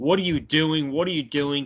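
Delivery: ordinary delivery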